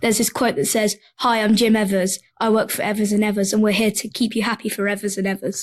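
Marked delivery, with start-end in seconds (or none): none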